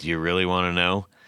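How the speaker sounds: put-on eye-rolling, exasperated tone. Retelling how a pickup maker answered a question: imitating an eye-rolling, exasperated reply. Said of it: "rolled his eyes, goes".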